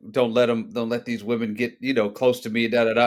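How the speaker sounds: ordinary talk, nothing marked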